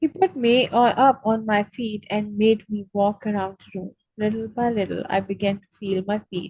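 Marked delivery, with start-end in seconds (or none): none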